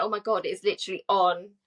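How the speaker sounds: ordinary talk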